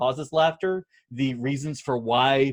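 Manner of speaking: ordinary delivery, nothing marked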